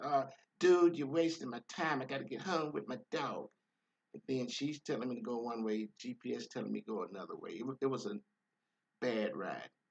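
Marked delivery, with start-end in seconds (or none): 0.0-3.5 rude, demanding, pitched-up complaining voice. Retelling a ride where a passenger spoke rudely: imitating a rude passenger. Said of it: "this rude lady talking crazy".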